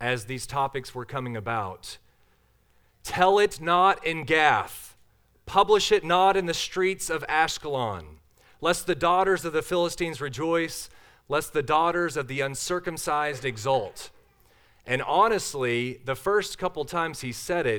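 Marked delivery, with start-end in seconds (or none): none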